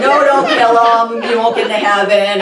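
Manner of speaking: ordinary talk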